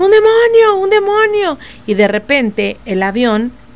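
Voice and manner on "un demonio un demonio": frantic, very high, panicked shout of alarm. Retelling a man on a flight who sees a demon, retelling a shout. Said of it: "empieza a gritar".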